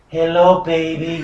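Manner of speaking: loud put-on voice with Spanish accent.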